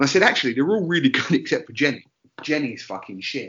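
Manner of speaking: ordinary talk, nothing marked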